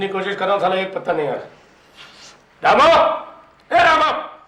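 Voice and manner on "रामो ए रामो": louder, slower shouting. Character calling out to Ramo, shouting for Ramo. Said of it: "क्या चिल्ला क्यों रहा है?".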